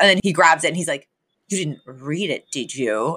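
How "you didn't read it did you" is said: low, wary, distrustful murmur. Retelling a scene where Niles questions Fran about a list: mock-suspicious Niles. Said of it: "Super suspicious".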